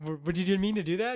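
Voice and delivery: put-on sarcastic tone. Retelling a neighbor's questions to a tree cutter: imitating a sarcastic neighbor. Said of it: "sarcastically asking him".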